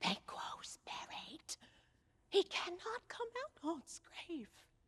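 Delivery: hushed, breathy, barely voiced whisper. In a staged scene, a character speaks alone, whispering.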